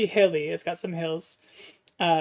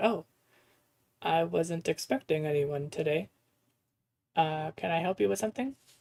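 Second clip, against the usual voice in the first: very calm, relaxed plant-creature voice; 3 dB quieter than usual. Voicing a moss plant person greeting a visitor: very calm, relaxed moss character. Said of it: "she is going to be very calm".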